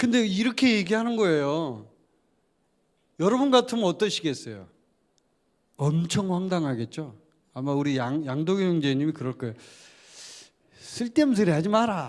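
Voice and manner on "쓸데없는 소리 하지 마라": put-on spoken in Busan dialect accent. Imagining how 양도경 would answer, in a 양도경 Busan accent. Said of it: "제가 좀 비슷하게 했는지 모르겠는데, 부산 사투리로 이렇게 할 거예요".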